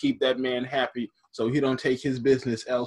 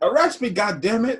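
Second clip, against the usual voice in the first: high-pitched yell; 8 semitones higher, 4 dB louder than usual. Picturing Spike Lee in the front, imitating Spike Lee yelling. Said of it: "Spike Lee in the front, like".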